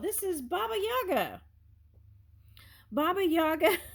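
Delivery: high voice, words broken up by laughter. Speaker recognizes Baba Yaga, an inside joke: laughing while talking. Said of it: "I'm sorry, I'm laughing".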